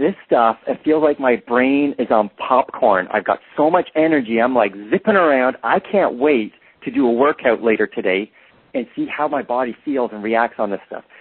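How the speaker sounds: ordinary delivery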